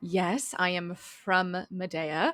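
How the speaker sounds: very slow, drawn-out sarcastic delivery. Answering in character whether she is from Medea, sarcastic in character. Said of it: "She kind of sarcastically gestures to herself".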